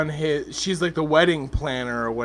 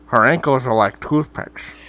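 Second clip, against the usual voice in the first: put-on Scottish accent, much lower pitch; 3 semitones lower, 4 dB louder than usual. Asked to repeat the remark in a Scottish accent, Sean Connery impression. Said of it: "Say that in a Scottish accent".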